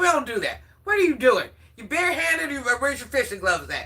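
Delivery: acted scolding tone. Retelling dad checking her for wearing gloves: imitating dad scolding. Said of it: "He said".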